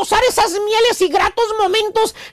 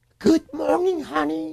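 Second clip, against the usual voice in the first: put-on tender, affectionate, soft, low, sweet voice; 5 semitones lower, 6 dB quieter than usual. Describing a wife greeting her husband on waking, imitating a sweet, loving voice. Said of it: "con voz dulce y amorosa".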